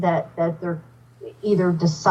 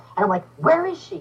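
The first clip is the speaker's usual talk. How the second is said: ordinary delivery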